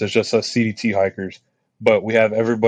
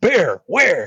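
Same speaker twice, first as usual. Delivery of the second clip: play-acted sudden, loud, startled, high half-awake call; 8 semitones higher than usual. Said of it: "everybody in the whole camp heard it".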